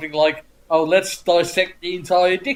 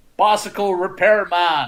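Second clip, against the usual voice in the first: very badly faked American accent. Retelling a comedy sketch where someone calls out: very bad American accent. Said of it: "in a very bad American accent".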